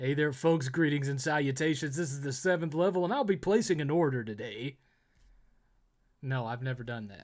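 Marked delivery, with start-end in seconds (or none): 0.0-4.8 put-on mock radio DJ announcer voice. Showing how you would order pizza using your radio DJ voice. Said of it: "Have you ever ordered pizza using your radio voice?".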